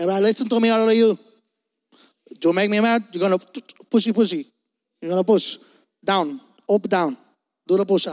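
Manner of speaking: commanding, barking drill-sergeant delivery. Speaker recalls an amazing drill sergeant giving orders, Drill Sergeant Montenez impression. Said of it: "i got to do an impersonation of him".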